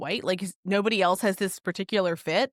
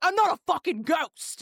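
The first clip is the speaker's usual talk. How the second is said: put-on, high-pitched, super furious outburst; 9 semitones higher than usual. Acting out a man shouting at passersby: imitating someone super mad. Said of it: "super mad about it".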